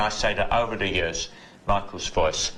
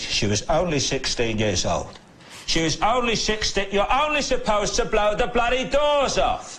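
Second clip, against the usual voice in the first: very high, emotional voice breaking; 13 semitones higher than usual. Coaching someone on the impression, the speaker demonstrates Michael Caine's emotional broken voice. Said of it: "the broken voice when he gets very emotional".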